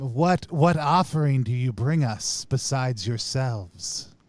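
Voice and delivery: hissing, squealing chorus of voices in unison. The game master voices many beings speaking as one, hissing, squealing chorus voice. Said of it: "sounds like a hissing, squealing tone".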